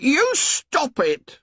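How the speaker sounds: shrill, very high-pitched cry. Reading a novel aloud, a boy protests: shrill voice. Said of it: "said Piggy shrilly".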